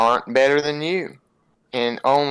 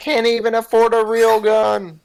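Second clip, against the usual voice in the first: very high, shrill shouted yell; 9 semitones higher, 4 dB louder than usual. While another describes a wagon guard with a crossbow, a player yells out in character. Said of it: "I'm gonna yell out".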